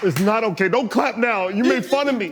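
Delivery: acted tearful voice. Acting out a tearful complaint after being told to quiver the lip: fake crying. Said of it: "He got the eye juice".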